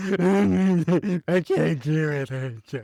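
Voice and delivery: very slow, high-pitched, fake blubbering sob. Retelling a TV episode scene, imitating Cordelia blubbering. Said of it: "continues to cry, basically blubber".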